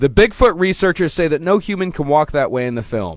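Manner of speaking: ordinary delivery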